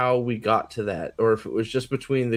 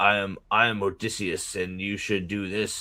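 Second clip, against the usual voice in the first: mock flat monotone, one-note, much lower pitch; 4 semitones lower, 3 dB quieter than usual. Criticizing an actor's line delivery, the speaker imitates his flat monotone. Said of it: "his line delivery was flat and monotone".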